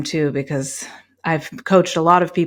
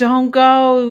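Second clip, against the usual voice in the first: mock fearful screaming, higher and louder; 9 semitones higher, 6 dB louder than usual. Acting out personified fear begging someone to stay: imitating fear screaming.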